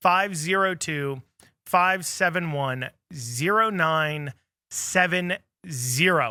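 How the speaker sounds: very slow, deliberate, each digit spaced out. Repeating a text number for listeners: saying it slower. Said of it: "I'm gonna say it slower for you guys".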